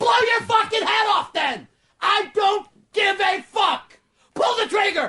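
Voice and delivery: very high-pitched, acted-out yelling. Retelling a three a.m. phone fight, yelling at her on the phone. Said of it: "with her going like this".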